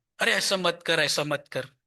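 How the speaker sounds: ordinary talk, nothing marked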